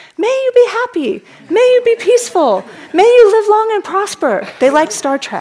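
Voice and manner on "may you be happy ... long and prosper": put-on shrill, very high, loud children's screaming. Retelling children unfreezing each other in a tag game: imitating children screaming. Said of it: "children screaming at the top of their lungs".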